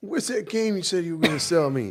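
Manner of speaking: put-on very high-pitched deep South Louisiana accent. Telling a story about their squad leader, the speaker imitates Sergeant Coleman's Louisiana accent. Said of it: "this guy's from like deep South Louisiana".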